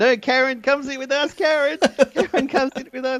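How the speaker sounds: very high-pitched shouting. Retelling how they and a friend yelled for karen to come sit, retelling their own yelling. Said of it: "me and my friend started yelling".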